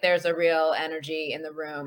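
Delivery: play-acted low, flat, bored deadpan monotone. Retelling what Ryan Poles told the media, imitating Ryan Poles sounding bored. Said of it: "He could not have sounded more bored".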